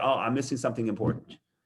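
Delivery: play-acted wry, sarcastic delivery. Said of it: "I'm being sarcastic".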